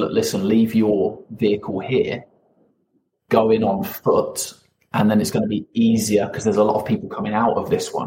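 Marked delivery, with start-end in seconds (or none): none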